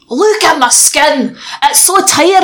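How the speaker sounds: slow Scottish advert voice. After talk of a not very good Scottish accent, do a Gerard Butler advert impression. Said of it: "I can only do that one Gerard Butler advert".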